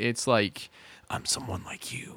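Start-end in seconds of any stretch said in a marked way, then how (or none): 1.1-2.2 hushed, soft, breathy whisper. Imitating Batman in the first movie, who is just whispering: whispered Batman voice. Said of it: "he's just kinda whispering".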